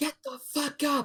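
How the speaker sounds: rough, blunt, high yell. Waking the sleeping party in character: yelling. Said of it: "Ian's gonna just yell".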